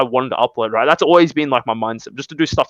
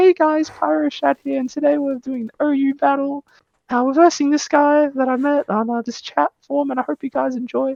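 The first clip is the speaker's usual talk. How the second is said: put-on very high, childlike baby voice; 12 semitones higher than usual. Recalling the voice used when making videos: put-on baby voice. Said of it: "I was with my baby voice, like".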